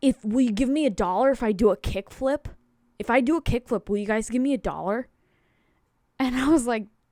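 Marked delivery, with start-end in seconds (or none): 0.0-5.1 put-on lisping child voice, louder. Retelling a kid who came up to them, the speaker imitates a kid's lisp. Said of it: "he was all lispy".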